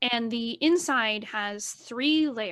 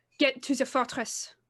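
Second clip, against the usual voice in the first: firm, authoritative, commanding tone. Game master voicing a character's quick reply to the party, commanding voice. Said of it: "In a commanding voice".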